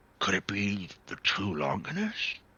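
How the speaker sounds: hushed, secretive half-whisper. Thrag speaks so only one other can hear, half-whispering. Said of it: "Thrag speaks in a whisper".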